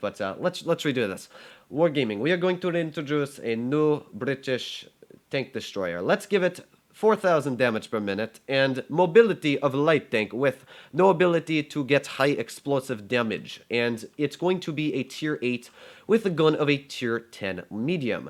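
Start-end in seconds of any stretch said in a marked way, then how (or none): 1.7-18.3 bad, trashy, fake put-on Russian accent. A gamer redoes a bit, this time in a bad Russian accent. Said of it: "my Russian accent is honestly trash".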